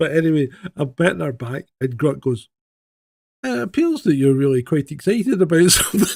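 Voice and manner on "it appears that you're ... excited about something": smooth, put-on female AI assistant voice. Retelling what a phone assistant said, imitating a female ai voice. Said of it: "And it's a female voice".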